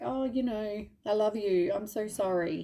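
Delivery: put-on slow, drawn-out, apologetic tone. Imitating a violent person who apologizes with flowers: imitating an abuser's apology. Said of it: "belting the absolute shit out of you and then giving you flowers".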